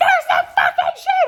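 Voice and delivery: very high, slow, loud laughing shriek.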